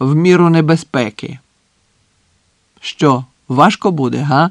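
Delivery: plain reading voice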